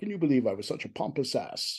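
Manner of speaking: soft, hushed voice, under the breath. Retelling what Patrick said about his first day on set: imitating Patrick's soft voice. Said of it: "in a soft voice".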